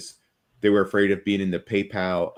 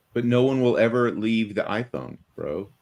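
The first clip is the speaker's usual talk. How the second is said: slow, sarcastic, faux-earnest, fake certainty; 3 semitones higher than usual. Arguing about Apple's valuation, faking a belief: sarcastic, put-on conviction. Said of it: "I'm being sarcastic".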